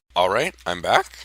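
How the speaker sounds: cracked voice, breaking partway through. Coming back after stepping off camera: voice cracking. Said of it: "Oh, voice crack".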